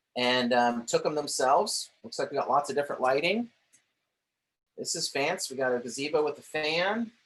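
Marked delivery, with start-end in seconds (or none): 4.8-7.1 clearly sarcastic, mock-praising tone. Commenting on a home listing's photos for viewers: sarcastic tone. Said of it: "Y'all can hear my sarcasm".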